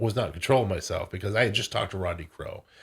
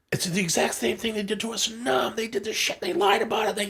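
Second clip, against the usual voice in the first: put-on very high-pitched, furious, angry yell; 14 semitones higher than usual. Retelling how an uncle yelled at the TV: imitating Bob Gainham yelling. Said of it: "he started yelling at the T V saying".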